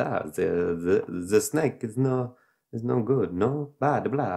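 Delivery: slow, vague put-on Eastern European accent. Retelling what a strange man said, in a vaguely eastern european accent. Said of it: "almost like a Eastern European maybe kind of voice".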